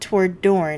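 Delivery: plain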